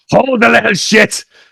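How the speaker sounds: mock very high, rough, ragged scream. Retelling a TV scene, imitating Fat Gaffer screaming. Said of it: "screaming at Marina".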